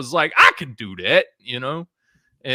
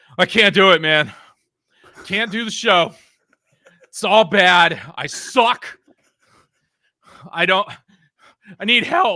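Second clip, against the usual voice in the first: put-on panting, much higher pitch; 8 semitones higher, 5 dB louder than usual. Telling Mike how he showed up out of breath, imitating Mike panting. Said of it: "you're panting".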